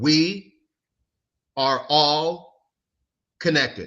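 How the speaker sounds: very slow, deliberate, each word drawn way out. Making a point to Anna, speaking very slowly. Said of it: "I'm going to say it very slow".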